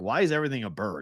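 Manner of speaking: ordinary delivery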